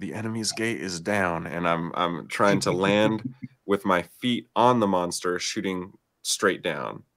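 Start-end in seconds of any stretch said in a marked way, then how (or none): 0.0-1.5 whispering. Asked if Archer is shooting again, the player describes the move, whispering. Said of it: "I'm whispering".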